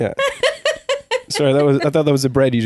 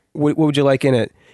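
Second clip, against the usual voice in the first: usual speaking voice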